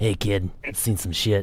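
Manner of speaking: put-on soft, low, grizzled old lady voice. Imagining how Doc Halverson would talk, old grizzled lady Doc Halverson. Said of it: "an old grizzled lady look".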